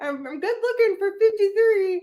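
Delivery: annoying, very high, squeaky mocking voice, climbing pitch. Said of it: "I can make her say".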